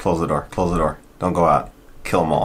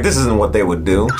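usual speaking voice

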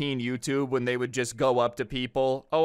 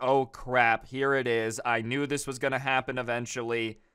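ordinary talk

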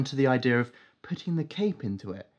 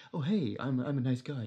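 put-on gentleman voice, quieter and slower; 6 dB quieter than usual. Speaker describes the animated show's hero as a nice gentleman, doing a Bruce Wayne impression. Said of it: "He talks like that".

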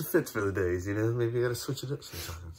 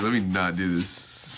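ordinary talk, nothing marked

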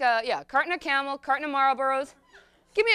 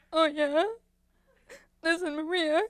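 put-on weeping and crying, higher pitched; 3 semitones higher than usual. Acting out a phone call with Maria after two weeks of crying, retelling crying on the phone. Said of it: "Two weeks go by, I walk up and down the hall, crying, smoking cigarette after cigarette, cradling a bottle of bourbon like it's a teddy bear. Sometimes a phone would ring".

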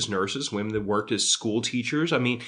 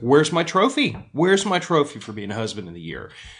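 mock sarcasm laid on thick with a swooping tone; 4 semitones higher, 4 dB louder than usual. Speaker retelling their reply to someone's joke, retelling a sarcastic retort. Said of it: "I kept retorting sarcastically".

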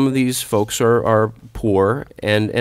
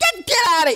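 put-on shrill, high, snapping outburst. Telling about a calm man who would suddenly snap: imitating someone losing it. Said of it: "He would lose his mind".

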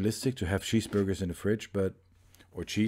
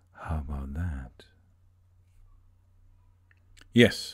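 sexy, seductive, lower voice; 6 semitones lower than usual. Making cheese, putting on a sexy voice. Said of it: "this was me with my sexy voice".

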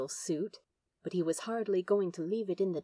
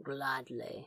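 low, soft mutter under the breath; 5 semitones lower, 8 dB quieter than usual. Narrator reads a character's reply as another slips down a drain, muttered. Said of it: "muttered Crowley".

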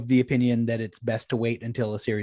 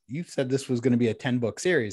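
usual speaking voice

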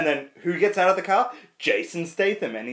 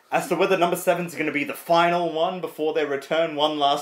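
ordinary talk

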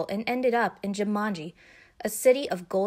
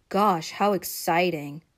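bored, unenthused, flat, unexcited deadpan monotone; 3 semitones lower than usual. Reacting to his sister reading a game square in a dice game, in a very unexcited voice. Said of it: "said Peter in a very unexcited voice".

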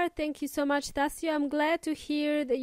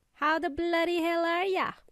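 clumsy, unconvincing Australian accent; 3 semitones higher than usual. Podcast host greeting listeners at the start of the show, in a bad Australian accent. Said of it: "that was my bad attempt at Australian accent".

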